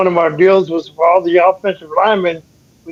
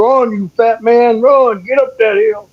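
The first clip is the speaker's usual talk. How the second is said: mock yelling jeer, stretched out and pitched up; 5 semitones higher than usual. Retelling a rider on horseback yelling at running linemen: imitating someone yelling. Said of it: "yelling at us".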